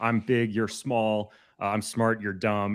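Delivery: slow, drawn-out, play-acted voice building into a yell. Explaining the tier's name, imitating Harry Wormwood yelling. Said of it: "there's a scene where the dad starts yelling".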